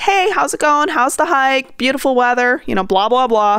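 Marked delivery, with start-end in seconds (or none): 0.0-2.6 cheery, sociable, very friendly, pitched high. Dog owner showing how they greet hikers on the trail, in a very friendly voice. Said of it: "in a very friendly voice".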